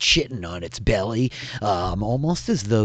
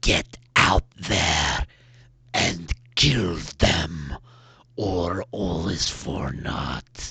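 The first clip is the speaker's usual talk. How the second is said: rumbling, low, slow growl in a giant voice; 4 semitones lower than usual. Voicing a voice from the other room ordering the ogre: growled voice. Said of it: "as they're growled from the other room".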